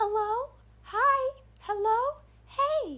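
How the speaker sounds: eerie doll voice, very high and very slow. Speaker recounts a voice circling the fence line, in a creepy doll voice. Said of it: "just like that creepy doll voice".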